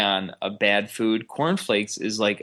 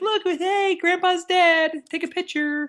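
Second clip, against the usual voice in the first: mock cheerful, happy voice with higher pitch. Describing a funeral photo of a family, imitating happy people. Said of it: "and they're all so happy".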